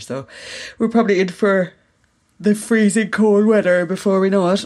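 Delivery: halting speech broken up by a yawn. Speaker chatting after a long day, yawning while speaking. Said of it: "Excuse me, yawning".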